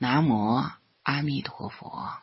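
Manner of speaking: plain reading voice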